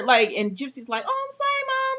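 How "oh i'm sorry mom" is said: put-on way up high young girl voice. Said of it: "I could just hear her voice saying it".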